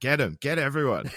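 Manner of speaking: put-on, sudden, rabble-rousing shouted yell. Retelling how a mate yelled when people were riling up: imitating a friend yelling. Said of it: "he'd just start yelling out".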